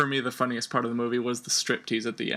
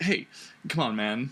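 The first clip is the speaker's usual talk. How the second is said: normal talking voice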